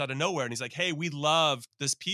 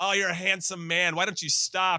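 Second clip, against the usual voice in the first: put-on, loud heckling yell; 5 semitones higher than usual. Retelling heckling a passing player in the mix zone: retelling own yelling. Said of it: "So I'm just yelling at him".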